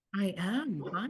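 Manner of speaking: soft, smooth easy-listening radio announcer voice. Answering the host who asks if he's with them today, easy listening voice. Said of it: "you got your easy listening voice on".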